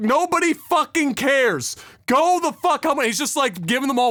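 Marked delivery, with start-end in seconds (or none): 0.0-3.0 mock enraged scream, slow and furious. Recounting a man laying into onlookers; imitating him screaming. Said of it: "and he actually screams like".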